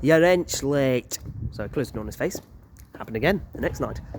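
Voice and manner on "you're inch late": haunting, spooky, eerie ghost voice. Retelling what a ghost who looked like the landlord said at the door, spooky voice. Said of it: "in that very spooky voice of his".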